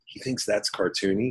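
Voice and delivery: hushed, confiding stage whisper. Retelling how Genndy leaned over during dailies: imitating Genndy whispering. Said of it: "and he just whispered".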